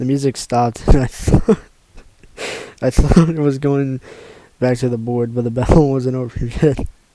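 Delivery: loud, giggling, laughing through the words. Reading a story aloud, laughing while talking. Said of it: "I can't stop laughing at this stupid shit".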